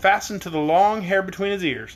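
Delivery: ordinary delivery, nothing marked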